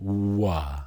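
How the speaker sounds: long, slow, drawn-out wah sound. Teaching how to pronounce letters, showing the sound slowly: slow drawn-out 'wah' sound. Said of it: "I want you to do it slow, like this".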